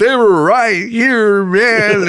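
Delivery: tearful, high-pitched, very drawn-out sobbing. Retelling a friend insisting the fries were right there: imitating someone sobbing. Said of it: "And he's just sobbing".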